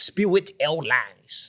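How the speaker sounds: put-on Haitian accent. Joking about a flight to Haiti: put-on Haitian accent. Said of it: "That's my Haitian accent".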